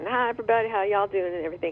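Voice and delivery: fake, mock-sweet Texas accent. Imitating how she greeted everybody when she came in each morning, in a real sweet Texas accent. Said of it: "she'd be real sweet in her Texas accent".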